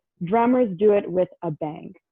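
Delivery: ordinary talk, nothing marked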